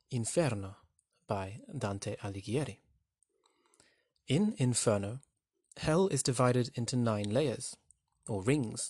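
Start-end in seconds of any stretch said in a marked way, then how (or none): 0.1-2.8 put-on Italian accent, done as best possible. Explaining a poem's link to Dante's Inferno, saying the title in Italian accent. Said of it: "in my best Italian accent".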